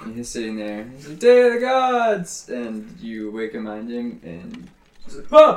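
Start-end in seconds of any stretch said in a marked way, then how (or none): 1.2-2.5 cheering shout, much higher and slower. Storyteller acting out a man who is woken up and spills his beer, cheering.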